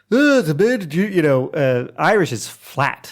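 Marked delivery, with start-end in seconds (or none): 0.1-1.0 raised, pitched-up put-on Scottish accent. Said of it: "where Scottish is, like".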